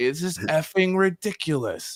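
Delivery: shrill, loud, high, drawn-out complaining. Retelling a coach's complaint about the corner: imitating a loud complaint. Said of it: "he said it loud".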